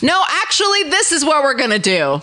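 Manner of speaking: strict, no-nonsense tone. Showing how one repeats oneself when someone tries to blow past: firm, stern voice. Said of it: "So I just kind of repeat myself in this voice".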